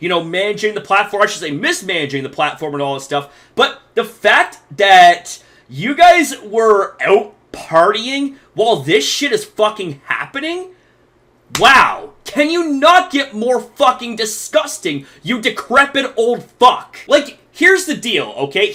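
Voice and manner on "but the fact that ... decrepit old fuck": honest, fed-up, genuinely angry rant. Criticizing the platform's owner for partying during an assault: genuinely pissed off. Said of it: "I am genuinely pissed off about this".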